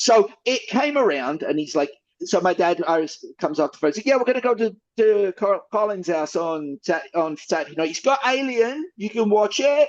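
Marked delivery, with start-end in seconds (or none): 4.1-9.9 put-on Cockney English accent. Retelling the dad announcing a Saturday movie night: [name]'s Cockney accent. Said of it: "my dad's Cockney accent now".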